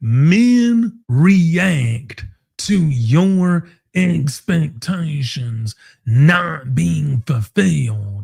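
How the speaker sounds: measured, slowed down, spelled out, "men" drawn out. Repeating a point for anyone who isn't getting it, saying it a bit slower. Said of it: "I'm going to say that a little bit slower".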